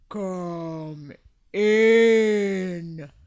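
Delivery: low, deep, slow, unhurried voice, "in" drawn out. A voice inside the tomb answers a knock on the door: deep, slow voice. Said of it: "heard a deep, slow voice say".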